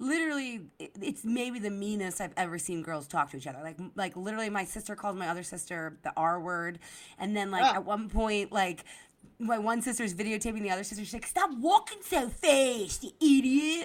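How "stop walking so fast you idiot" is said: put-on heavy, thick Delco accent, very loud, drawn out. Acting out one sister talking to the other while videotaping her, in a thick Delco accent. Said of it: "in this thick Delco accent".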